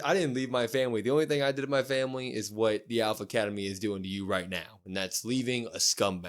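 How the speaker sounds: normal talking voice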